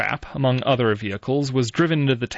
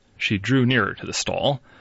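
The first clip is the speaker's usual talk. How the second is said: ordinary delivery, nothing marked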